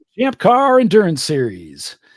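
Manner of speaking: loud, swooping race announcer voice. Naming the racing series after being asked to plug it: announcer voice. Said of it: "Here comes my announcer voice".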